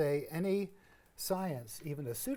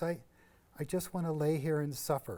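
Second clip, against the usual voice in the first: usual speaking voice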